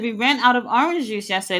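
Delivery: plain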